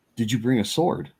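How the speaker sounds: voiced stage whisper. Retelling how a brother leaned over and asked him something: imitating someone half-whispering. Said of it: "he leans over to me and he whispers".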